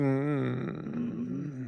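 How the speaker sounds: low, soft, dismissive mumble. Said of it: "he's like".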